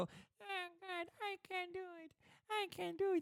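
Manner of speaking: small, little put-on voice. Mocking imagined little men scratching their heads, in a tiny little voice. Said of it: "con la vocina".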